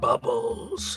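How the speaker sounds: whispered, seething, breathy anger. Repeating a donation name after the other host: angry voice. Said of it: "it needs to be said in an angry voice".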